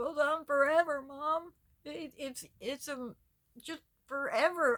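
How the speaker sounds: crying, sobbing voice. Retelling running home to mom after seeing the alley: retelling own past crying. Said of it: "I'm crying, telling her".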